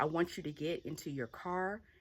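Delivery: ordinary delivery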